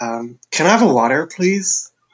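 imitated American accent. Challenged to try, the speaker attempts a line in an American accent. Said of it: "Me try to do an American accent".

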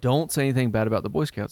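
ordinary delivery

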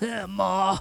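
put-on deep, low-pitched voice. Joking about the Golden Girls star's voice: Bea Arthur deep voice. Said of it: "that's acting like she had that deep voice".

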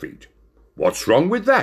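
ordinary delivery, nothing marked

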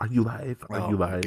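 soft, hushed half-whispered stage whisper. Retelling what she said: imitating a half-whisper. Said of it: "she whispers".

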